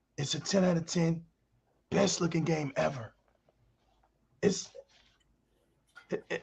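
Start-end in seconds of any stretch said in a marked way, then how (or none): 0.2-3.2 put-on solemn, earnest, fervent delivery. Mocking fans who close their eyes and speak: imitating fans' solemn conviction. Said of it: "they close their eyes, they hold their hands tight, and they say".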